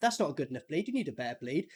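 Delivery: eerie, creepy psychopathic delivery. Retelling what a character said to a man with a knife, imitating a psychopathic tone. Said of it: "kind of sounded like a psychopath saying".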